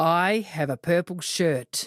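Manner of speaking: put-on, loud, insistent, said over and over. Retelling a guy repeating himself over and over to the band: loud. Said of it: "saying over and over quite loudly".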